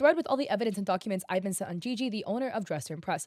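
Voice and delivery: normal talking voice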